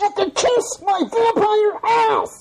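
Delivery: put-on would-be big scary voice, very high-pitched. A vampire character shows off his own big scary voice. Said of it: "A big, scary voice? ... I've got one of those, too. You want to hear it?".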